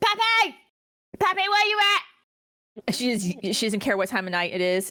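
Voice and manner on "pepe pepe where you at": very high, very slow, drawn-out loud holler. Recounting a woman walking down the street calling someone at night, retelling her loud yelling. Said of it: "she's just yelling".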